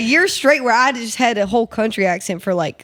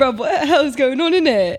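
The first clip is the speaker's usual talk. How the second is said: exaggerated, over-the-top British accent, pitched up; 6 semitones higher than usual. Imagining a visit to Air One, in an exaggerated British accent. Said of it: "half like British".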